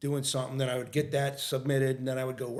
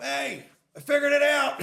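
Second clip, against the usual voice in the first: very high, drawn-out, called-out yell; 14 semitones higher, 7 dB louder than usual. Retelling calling upstairs to the wife from the couch: imitating own past yell. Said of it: "I just yelled up".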